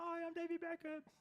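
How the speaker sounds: bad, squeaky, high voice, slow. Joking about a driver's looks, doing a David Beckham impression. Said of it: "that is not an impression of David Beckham".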